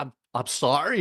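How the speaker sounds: hollow, insincere tone with nothing behind it. Retelling a movie scene where Juliette Lewis apologizes: Juliette Lewis insincere sorry. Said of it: "it's completely not there".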